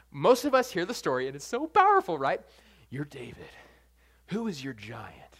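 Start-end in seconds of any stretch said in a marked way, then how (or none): 2.9-5.2 very quiet, low, hushed movie-trailer voice. Speaker mocking a common sermon line to an audience, in a cool movie theater voice. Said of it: "in that cool, like, movie theater voice".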